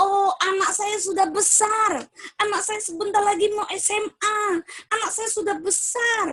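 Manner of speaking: high, proud, pleased, relaxed parent voice.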